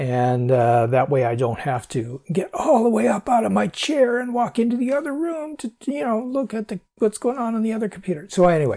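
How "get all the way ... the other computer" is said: put-on elderly man voice, pitched up. Speaker chatting with listeners, doing an old man voice. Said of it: "that's old man voice".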